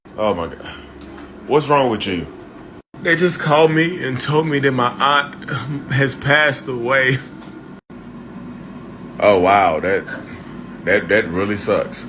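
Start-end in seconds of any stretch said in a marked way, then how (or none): 3.0-7.2 high, tearful voice talking through crying. In a skit, answering someone who asks what's wrong; crying. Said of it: "Like why are you crying?".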